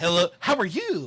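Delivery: loud put-on kid voice. Showing the voice the other speaker uses with children, in a kid voice. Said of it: "I do love your kid voice that you have".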